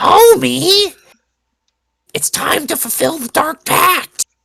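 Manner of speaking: squeaky, very high cartoon housewife voice. Asked to do a couple of Marge lines, in a Marge Simpson voice. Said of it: "do a couple Marge lines".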